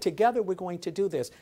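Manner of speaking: ordinary talk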